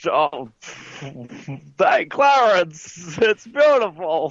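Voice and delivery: slow, drawn-out classic-film style voice. Doing an impression on request while describing VR: Jimmy Stewart impression. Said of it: "do Jimmy Stewart now".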